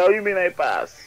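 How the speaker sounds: mock tearful, high-pitched crying voice. Retelling what they asked a man who said they passed, imitating own crying voice. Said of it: "in a crying voice".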